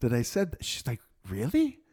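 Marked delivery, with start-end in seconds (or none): 1.3-1.7 very high, rising, surprised, astonished tone. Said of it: "she was so surprised".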